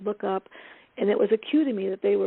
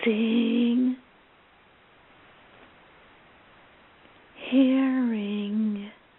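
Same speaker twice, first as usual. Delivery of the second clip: breathy, dreamy, spaced-out voice; 3 semitones higher than usual. Showing the wrong way to coach, santa fe style: breathy, spaced-out voice. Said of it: "I sound like I'm breathy and spacing out".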